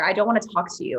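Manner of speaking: ordinary delivery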